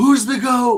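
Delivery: screaming, very high, loud and excited. Retelling a moment of freaking out during a fight: imitating own yelling. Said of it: "I was yelling".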